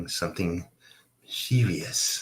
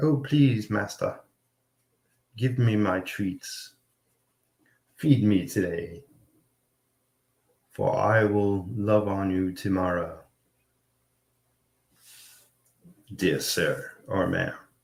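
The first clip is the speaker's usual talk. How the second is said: begging, pleading hungry cat voice. Voicing a drawn cat begging its master for treats: pleading cat voice. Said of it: "it's more like they're pleading".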